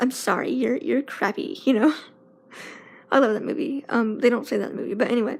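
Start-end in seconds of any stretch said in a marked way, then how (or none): 0.0-1.6 rude, snobby put-down tone. Making up a movie-style line after describing a rude woman, mock-snobby Mean Girls voice. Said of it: "like Mean Girls".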